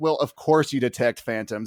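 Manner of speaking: ordinary talk, nothing marked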